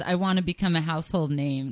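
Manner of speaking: usual speaking voice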